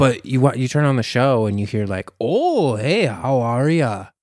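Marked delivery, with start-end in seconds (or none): 2.2-4.0 put-on slow, stretched-out, sing-song Wisconsin accent. Showing how the infamous serial killer sounds when you turn on the show, in Dahmer's Wisconsin accent. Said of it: "he's got that Wisconsin accent".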